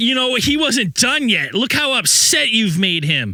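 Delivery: very high, slow, loud, aggrieved and upset tone. Retelling what a woman at the playground said: imitating an upset woman. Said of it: "she's upset".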